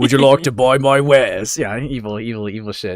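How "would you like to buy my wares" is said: deliberately bad, loud, put-on British shopkeeper voice. Repeating the other speaker's merchant impression: imitating a bad merchant impression. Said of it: "You just sound, like, British".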